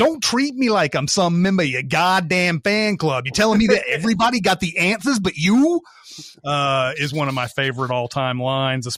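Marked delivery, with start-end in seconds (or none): 0.0-5.2 terrible put-on Boston accent, pitched up. Quoting a favorite line from Quiz Show in Rob Morrow's awful Boston accent. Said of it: "how Morrow s- says it in that awful Boston accent".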